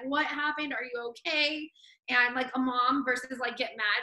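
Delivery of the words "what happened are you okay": mock screaming at a higher pitch. Recalling a mom screaming after her car got smashed, imitating someone screaming. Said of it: "screaming at me".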